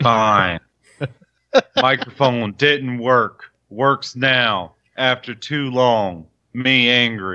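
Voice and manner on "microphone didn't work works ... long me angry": put-on caveman voice. Asked by a co-host why his excitement got ruined, answering in caveman talk. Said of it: "This is Caveman".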